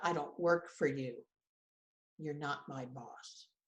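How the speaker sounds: play-acted, low, flat, deadpan, dismissive. Retelling a husband's reply to a list of chores: imitating a deadpan reply. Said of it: "with this deadpan look and said".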